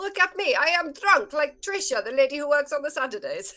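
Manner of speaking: loud calling-out voice. A character sitting in the tavern shouts out to the room: shouting. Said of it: "And shouts out".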